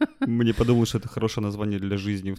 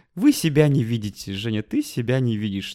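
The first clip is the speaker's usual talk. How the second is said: mock snide, sneering tone; 2 semitones higher, 4 dB louder than usual. Recounting what another woman used to say to her, retelling a snide remark. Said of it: "Она еще так ехидно говорила".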